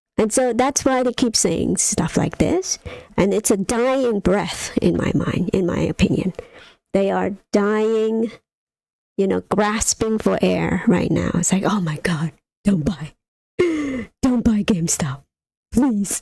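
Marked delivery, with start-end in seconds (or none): 11.7-16.3 put-on, desperate, begging pleading tone. Ranting about them, the speaker does an impression: mock-desperate pleading impression. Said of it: "That's my impression of them".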